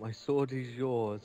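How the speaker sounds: mock sarcastic, servile, devoted tone. Playing a servant pledging loyalty to a princess: mock sarcastic devotion. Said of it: "sarcasm in your voice".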